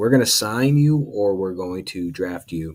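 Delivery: ordinary delivery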